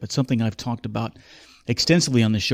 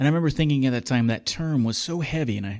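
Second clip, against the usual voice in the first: ordinary talk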